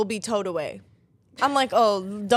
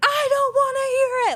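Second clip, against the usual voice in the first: put-on very high, stretched-out scream. Retelling an argument with a parking attendant: retelling screaming at someone. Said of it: "I'm screaming at him".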